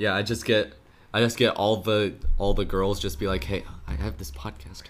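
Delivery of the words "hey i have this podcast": fake creepy whisper, hushed and breathy. Acting out a pickup line about having a podcast: put-on creepy whisper. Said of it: "You didn't have to whisper and make it creepy".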